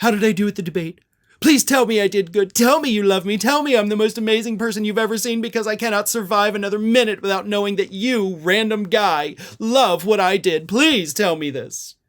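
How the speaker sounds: put-on desperate pleading voice. Mocking a politician begging a stranger for praise: mocking Donald Trump desperately begging for praise. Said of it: "Desperately wanting that validation from random guy".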